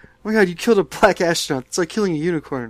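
small, high-pitched scream. Retelling a scene where rogue astronauts kill one: imitating Archer screaming. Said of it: "Archer starts screaming at him".

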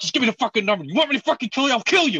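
mock high-pitched frantic tirade. Retelling Adam Sandler losing it on the phone with his sister: imitating Adam Sandler raging. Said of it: "listening to him freak the fuck out".

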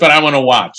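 put-on negative, skeptical tone. Retelling what a doubting friend said at a reading: imitating a negative attitude. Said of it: "she had this real negative attitude".

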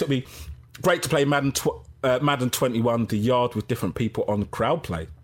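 ordinary talk

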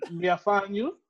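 mock Jamaican patois, menacing tone.

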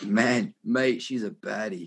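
put-on New Zealand Kiwi accent. Speaker says they love the Kiwi accent, then does it: Kiwi accent. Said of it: "I love the Kiwi accent. It's like".

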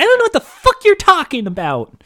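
put-on very high, shrill, loud, whiny angry kid voice. Showing how the character's line should be delivered, in a whiny, pissed-off kid voice. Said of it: "put in the whiny, pissed off kid voice".

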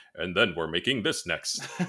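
epic movie trailer narrator announcer delivery. Speaker describing their next game slips into a movie trailer voice. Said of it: "That's a good trailer voice".

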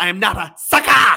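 very loud, high, drawn-out wrestling-promo yell. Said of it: "He says".

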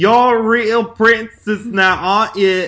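put-on slipping all the way into thick, full Cockney accent. Retelling how she says the line: full Cockney accent. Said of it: "It goes full, Cockney".

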